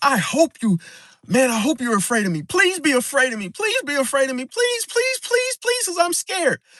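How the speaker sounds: scared, high, rising, desperate pleading. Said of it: "What that person is really screaming out is".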